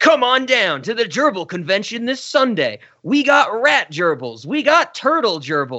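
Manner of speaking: high-pitched radio commercial announcer voice. Retelling a movie's tv commercial: imitating a commercial voice. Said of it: "the voice is like".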